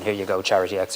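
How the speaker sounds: ordinary talk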